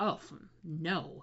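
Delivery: acted, held-back grossed-out sound. Retelling how an actor reacted to a pairing idea: imitating a restrained disgusted reaction. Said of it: "slightly restrained, but absolutely hilarious ew reactions".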